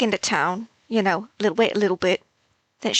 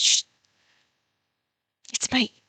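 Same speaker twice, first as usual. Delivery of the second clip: soft, quiet, hushed voice; 4 semitones higher than usual. Player character sneaking in to wake a lord, quiet. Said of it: "because I'm pretty quiet".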